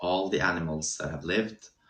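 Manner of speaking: normal talking voice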